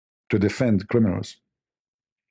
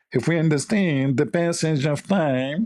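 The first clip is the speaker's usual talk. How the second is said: put-on high, slow, nasal politician voice. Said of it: "she speaks from her nose".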